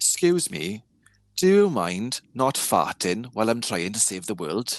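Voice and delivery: loud, slow Welsh accent. On a fandom podcast, delivering a line in a welsh accent. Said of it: "in a Welsh accent as well".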